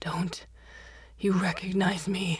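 meek, timid, cowering voice. A man cowering in water answers a woman who demanded who he is; cowering. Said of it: "Cowering in the water".

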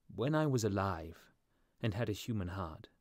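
ordinary delivery, nothing marked

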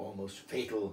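ordinary delivery

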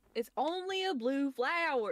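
put-on, slow, drawling country accent. Retelling what the stepbrother said about bees, imitating a country accent. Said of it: "he has, like, a country accent".

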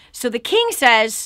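ordinary delivery

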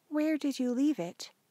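high, understated, low-key tone. A mother looks up from the stove to answer her child: asking quietly. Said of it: "She asked quietly".

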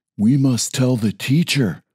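urgent, voiced stage whisper. Narrator reads Bentley half-whispering to Jackson as the children pick on Toby. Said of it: "Bentley whispered to Jackson".

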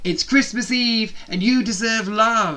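loud, triumphant crowing. Narrating a character announcing to everyone in the changing rooms: crowing voice, declared loudly. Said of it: "he handed me".

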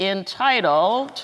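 very slow, drawn-out delivery.

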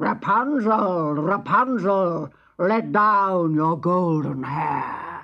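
loud, rough, gruff witch voice. Narrator reading a fairy tale, the witch calling up to Rapunzel, gruff voice. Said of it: "she called out in her gruff voice".

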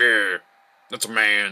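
booming, slow, loud, drawn-out approving voice.

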